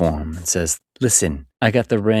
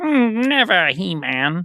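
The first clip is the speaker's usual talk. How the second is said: put-on cartoon villain voice, higher pitched; 12 semitones higher than usual. Retelling a movie scene, quoting Skeletor: Skeletor voice. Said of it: "And Skeletor's like".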